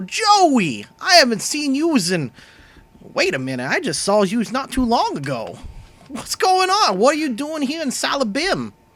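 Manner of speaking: thrilled, very high, swooping voice with stretched word. Voicing a wide, waddling character greeting an old friend: excited greeting as Tony. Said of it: "he raises his arms and go".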